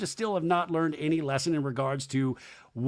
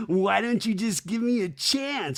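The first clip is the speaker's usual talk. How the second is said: mock flirtatious pleading, pitched higher; 5 semitones higher than usual. Retelling a man flirting hard with Sierra: imitating someone flirting hard. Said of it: "vehemently flirting with Sierra".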